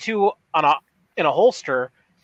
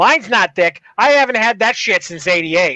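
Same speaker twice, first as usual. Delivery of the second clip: put-on Boston accent; 3 semitones higher, 4 dB louder than usual. Reading lines aloud to a co-speaker: boston accent. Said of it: "I'm reading this in a Boston".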